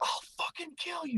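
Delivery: put-on very high-pitched, unhinged kid's yell. Retelling how a drunk twelve-year-old went off at the speaker, imitating a kid yelling. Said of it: "yelling at me".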